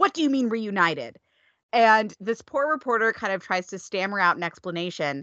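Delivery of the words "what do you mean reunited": acted-out, seeing-red angry snapping tone. Recapping a show, the speaker acts out Arya snapping at a reporter. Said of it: "she snaps".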